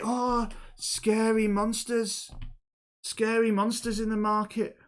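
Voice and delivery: tiny, small high voice, very slow and drawn out. Telling the story, the speaker voices what they say, in a small voice. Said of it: "it speaks in a in a small voice".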